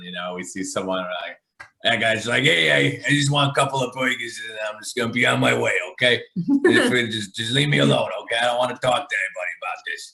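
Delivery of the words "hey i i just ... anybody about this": classic Chicago guy accent. A Chicagoan demonstrates the stereotypical Chicago guy accent. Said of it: "stereotypical Chicago guy accent".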